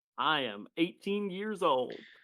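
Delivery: stated with very great pride. Retelling being asked his age by a woman, the speaker answers: retelling a proud answer. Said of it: "I say that very proudly".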